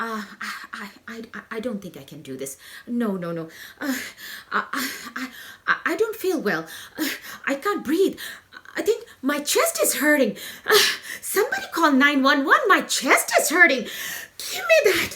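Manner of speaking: loud, rising, stammering, panicked babble. Retelling own past fear of public speaking: acting out a panic attack. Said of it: "A panic attack".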